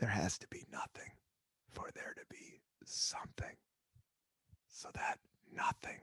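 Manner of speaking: very quiet whisper for dramatic effect. Speaker musing aloud whispers for dramatic effect, whispering. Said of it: "I don't know why I'm whispering".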